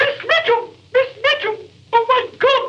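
put-on high female voice. Playing a trick by calling out as a woman, in a fake high woman's voice. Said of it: "That was me. I'm ashamed to say I played a trick on you".

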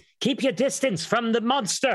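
very high, carrying call-out. A character up in the sky calls to the others, calling out aloud. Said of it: "say aloud as best as she can for them hearing".

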